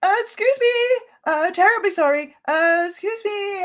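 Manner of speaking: very high shouted call, as if from far off. Voicing a character calling out from off the ship: NPC shouting from off the ship. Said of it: "you hear a voice shouting".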